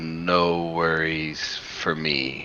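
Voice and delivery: ponderous deep voice, very slow. A creature telepathically answers Victor before attacking, in a very slow deep voice. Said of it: "like very slowly in a deep voice".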